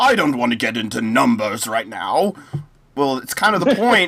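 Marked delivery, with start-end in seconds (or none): 0.0-2.3 mock upper-class British accent. Quoting Boris Johnson dodging a debate question: put-on posh British accent. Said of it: "pretending to do a British accent".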